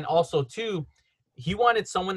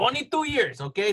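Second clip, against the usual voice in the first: put-on Los Angeles Spanish-inflected street accent, pitched higher; 5 semitones higher than usual.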